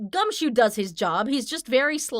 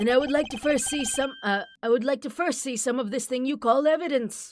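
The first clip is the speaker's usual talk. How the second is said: put-on old man voice; 4 semitones higher than usual. Voicing a character, Alba old man voice. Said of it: "like the old man voice".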